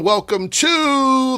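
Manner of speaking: cracking, rising voice. Podcast host welcoming listeners to the show, voice cracking. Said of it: "My voice just cracked there".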